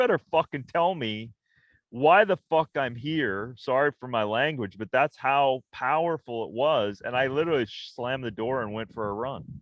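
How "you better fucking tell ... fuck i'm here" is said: raging, furious, swearing outburst. Recalling crying at dawn after moving to Hollywood: retelling a scream. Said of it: "I screamed at God and I was like".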